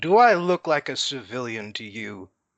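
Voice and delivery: drawn-up, authoritative, commanding booming voice. Told to turn back to town, the speaker's character draws himself up, booming out. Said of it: "I draw myself up and I boom out".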